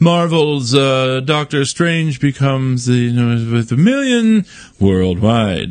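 slow, stretched-out news anchor delivery. Speaker repeating another person's headline, in a news anchor voice. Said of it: "He said that kind of like a news anchor".

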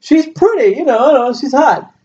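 high-pitched, gushing, effusive voice.

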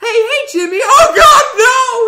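mock panic, very high, very loud, shrill cry. Retelling how players react when the killer shows up: imitating panicked players. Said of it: "start panicking".

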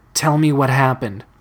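plain

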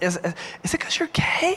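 tentative, hesitant whisper, testing the words. Retelling asking two strangers a question after church talk: retelling a whisper. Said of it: "so you whisper it 'cause it makes it less bad".

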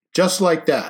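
emphatic, firm, insistent delivery. Jake answers Izzy's sarcastic question, emphatic. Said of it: "Jake said emphatically".

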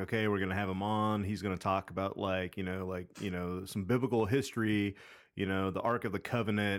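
normal talking voice

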